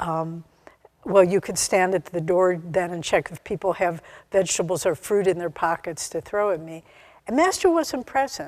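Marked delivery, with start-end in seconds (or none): none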